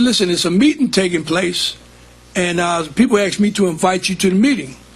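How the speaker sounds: plain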